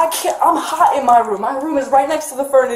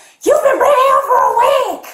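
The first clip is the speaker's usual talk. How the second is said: mock scream, pitched very high and shrill; 11 semitones higher, 4 dB louder than usual. Retelling an argument during a breakup phone call, the speaker is imitating mom screaming. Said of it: "And she screamed".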